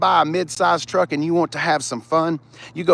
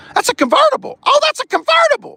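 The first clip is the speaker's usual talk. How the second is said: sudden, raised, very high-pitched exclamation; 5 dB louder than usual. Reviewing a used car listing, voice going really high. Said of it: "my voice got really high".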